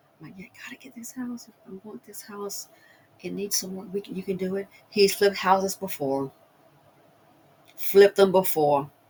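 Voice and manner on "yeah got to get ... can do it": soft, secretive whisper. Retelling what she said quietly to her husband about the cameras: retelling a whisper. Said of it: "So I just kinda whispered it to him".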